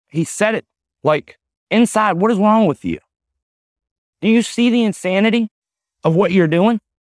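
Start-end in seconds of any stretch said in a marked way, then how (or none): 2.2-6.8 put-on earnest, heartfelt, worried tone, pitched up. Recounting what a man asked him back then, retelling sincere concern. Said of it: "he didn't say it to be smart".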